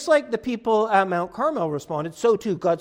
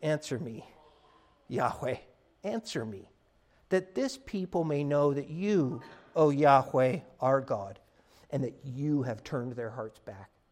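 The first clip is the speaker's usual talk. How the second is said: calm, hushed, very deep pleading tone; 8 semitones lower, 9 dB quieter than usual. Speaker retelling how a man stood up and prayed, retelling a calm, quiet plea. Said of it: "just calmly, just quietly, he says".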